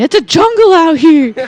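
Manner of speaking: very slow, stretched-out yell. Imagining what a friend would yell on coming out: imitating someone yelling. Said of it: "would come out and be yelling".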